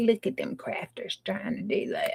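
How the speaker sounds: breathy whisper broken by laughter. Crafting and joking that the devil mocks the effort: imitating the devil laughing. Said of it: "He's laughing right now".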